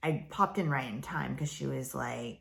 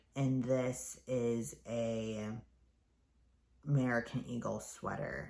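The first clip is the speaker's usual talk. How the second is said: level, flat drone without any pitch movement. Imitating another show's host describing a sweater: imitating a monotone voice. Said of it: "her voice was so monotone".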